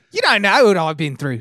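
very loud, high, silly, goofy put-on Australian accent. Acting out a man recounting his ordeal like a war veteran, in a goofy Australian accent. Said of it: "But in a goofy Australian accent".

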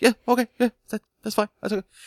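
very high, curt, short voice strained with pain.

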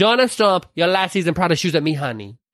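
high, boyish, laid-on, put-on Latin American accent. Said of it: "That may sound racist if I do it".

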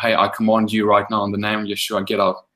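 plain

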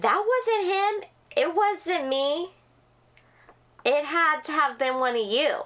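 put-on high, cross, accusing yelling telling-off. Retelling the same stranger denying it: imitating someone yelling. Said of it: "she's yelling at us".

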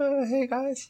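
feeble, faint, high, weak calling voice. Voicing a blood corpse that calls out in a faint voice. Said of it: "the blood corpse called out in a faint voice".

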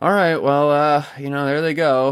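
play-acted bored announcer, flat, checked-out monotone. Imitating checked-out announcers during garbage time, in a mock-bored Owen voice. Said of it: "they're already completely checked out. ... they're in the Owen voice".

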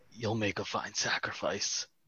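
very quiet, hushed, menacing whisper. Voicing a character leaning down to a captive's ear: whispering in character. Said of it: "lean down and whisper in his ear".

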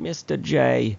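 put-on high, creaky, squeaky New Jersey accent. Describing a robot character that sounded like Harley Quinn; Harley Quinn voice. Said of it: "you were channeling your inner Harley right there".

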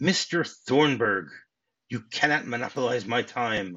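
plain

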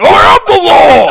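very loud, very high, rough, drawn-out booming shout. Imagining Sylvester Stallone as Jacob Marley: shouting like Sylvester Stallone. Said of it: "Just shouted in the same way that he did".

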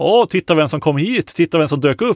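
usual speaking voice

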